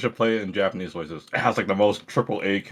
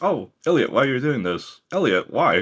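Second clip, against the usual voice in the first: put-on curious little kid voice; 5 semitones higher than usual. Discussing a character's Japanese voice, imitating it: Faye's curious kid voice. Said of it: "literally like a kid that's very curious".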